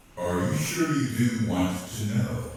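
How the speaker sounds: deep, rich voice. Telling a story, a voice asks Monroe a question: deep, rich voice. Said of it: "he hears this deep, rich voice say".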